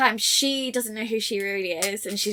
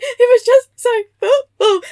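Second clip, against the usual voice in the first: put-on shrill, very loud, very high, drawn-out wailing sobs; 14 semitones higher, 12 dB louder than usual. Retelling a TikTok skit about a girlfriend who cries over a gift: imitating someone crying. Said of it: "why are you crying?".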